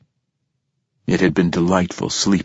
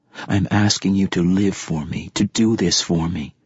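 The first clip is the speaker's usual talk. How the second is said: plain reading voice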